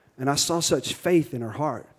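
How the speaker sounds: normal talking voice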